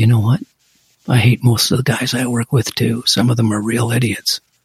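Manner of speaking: put-on whisper. Retelling leaning in toward a suspect in an interview: retelling a whisper. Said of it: "I leaned in on him and I whispered".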